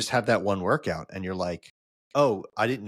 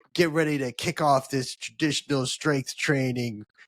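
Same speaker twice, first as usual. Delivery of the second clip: put-on British accent, pitched up; 5 semitones higher than usual. Retelling what the workout voice on a watch says: imitating the watch's british voice. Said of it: "a British voice will kick in and go like".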